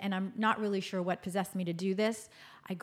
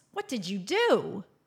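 put-on shocked gasp, louder; 5 dB louder than usual. Retelling a mother seeing a bad haircut: imitating mother's shocked gasp. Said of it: "she gasps".

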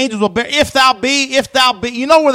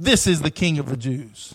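mock facetious jeer, sneering and dripping sarcasm; 9 semitones lower, 9 dB quieter than usual. Retelling how the mockers taunted him with the sign: imitating a sarcastic sneer. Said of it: "As sarcastically as they could say it".

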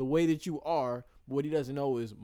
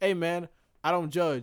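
dead-serious, sincere and earnest tone; 4 dB louder than usual. Imitating a friend's reply to a joke: Josiah's serious tone. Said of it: "Josiah is so serious".

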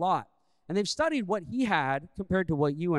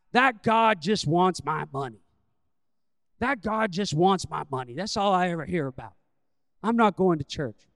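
put-on thick Virginia accent, old man voice; 4 dB louder than usual. A speaker retells what an old man answered him; thick Virginia old man accent. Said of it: "in his thick Virginia old man accent".

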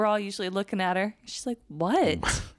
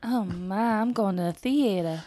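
put-on Southern belle accent. Showing what the other speaker's accents all turn into, in a fake Southern belle accent. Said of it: "Why are we still doing it?".

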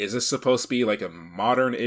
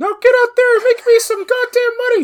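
shrill, very high, loud yell; 13 dB louder than usual. Joking that Mickey Mouse is called Michael, voicing him: Michael Mouse voice. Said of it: "Michael over on the side being like".

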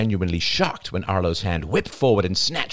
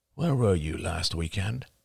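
plain reading voice

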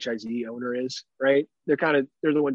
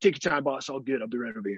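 put-on manly macho voice; 3 dB quieter than usual. Retelling ordering a sandwich from the workers: imitating own manly macho talk. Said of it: "serious, like, manly macho talk".

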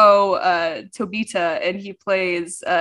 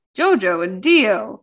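anime episode-title announcer-style voice. Reading out a Netflix summary title, imitating the announcer's reading. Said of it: "I always have to read it like that because that's what the announcer says".

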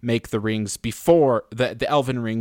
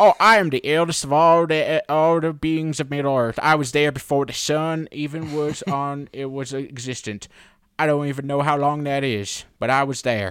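hillbilly way of talking; 4 semitones higher than usual. Complaining about last night's episode, mimicking how Tom Bombadil talks: Tom Bombadil hillbilly voice. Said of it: "He is literally a hillbilly. It talks like this".

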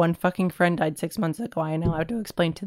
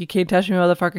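plain

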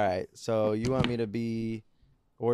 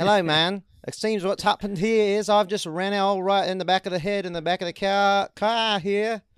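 very high, loud fake British or Australian accent; 9 semitones higher, 7 dB louder than usual. Trying out an accent after being asked, put-on british or australian accent. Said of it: "I can't tell which one I'm doing".

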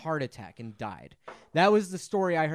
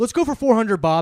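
mock-excited game show contestant, much higher, louder; 5 semitones higher, 10 dB louder than usual. Retelling how a man acted as a contestant on The Price is Right, imitating a super jazzed contestant. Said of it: "he was super jazzed".

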